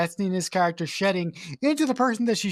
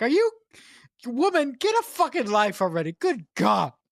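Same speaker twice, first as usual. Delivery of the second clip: mock fed-up, enraged yell, high-pitched; 4 semitones higher than usual. Retelling a reaction to the mother in a film: imitating own yell at the tv. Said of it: "yell at the television".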